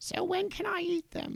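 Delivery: piercing, shrill, very high woman's voice. Narrator reading a scene aloud, voicing the witch: shrill female voice. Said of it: "And then a shrill female voice".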